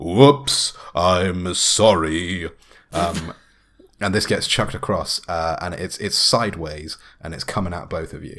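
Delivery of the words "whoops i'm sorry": resounding booming voice, louder and much slower. Game master voicing a 700-pound muscular man in a chamber: booming voice. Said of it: "his voice is booming around the chamber now".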